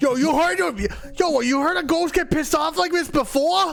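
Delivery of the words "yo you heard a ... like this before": put-on Boston accent. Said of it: "Boston as hell".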